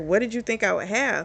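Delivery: ordinary delivery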